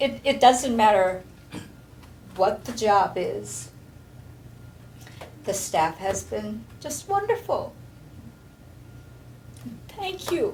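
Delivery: getting teary, tearful voice. Thanking the staff who take care of them, teary. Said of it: "I get really teary".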